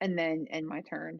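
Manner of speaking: normal talking voice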